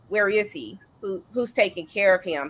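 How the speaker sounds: ordinary talk, nothing marked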